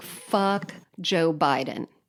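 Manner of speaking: ordinary talk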